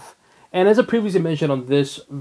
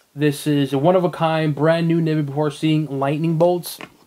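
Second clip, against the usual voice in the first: normal talking voice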